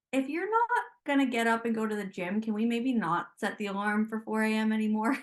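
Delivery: ordinary delivery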